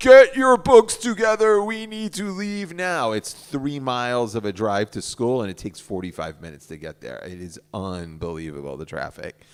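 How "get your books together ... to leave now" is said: very loud, high yelling. Retelling the morning carpool, imitating own yelling at kids. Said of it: "I'm yelling at these kids".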